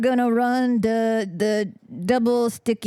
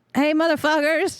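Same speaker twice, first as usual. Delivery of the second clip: light call-out voice, pitched up; 6 semitones higher than usual. Playing a character who decides to yell at the defenders: yelling at them. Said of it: "I'm gonna yell at them".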